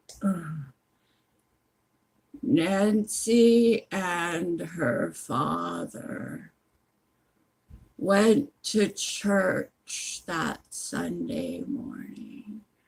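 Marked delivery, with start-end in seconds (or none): 2.5-12.7 put-on slowest, drawn-out, drunk-sounding audiobook reading voice. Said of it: "the person sounds really drunk".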